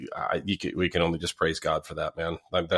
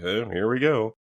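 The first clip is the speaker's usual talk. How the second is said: mock sarcastic tone, higher pitch; 3 semitones higher, 4 dB louder than usual. Retelling what cops always answered when asked how they were: imitating a sarcastic reply.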